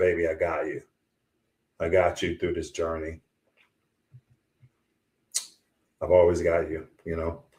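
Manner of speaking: choked-up voice catching with emotion. Speaker imagines what his wife would say to him, choked up. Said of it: "I get a little choked up here".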